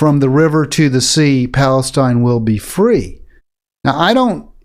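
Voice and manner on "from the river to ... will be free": usual speaking voice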